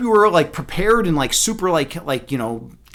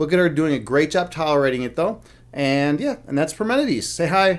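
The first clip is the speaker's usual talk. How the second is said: ordinary talk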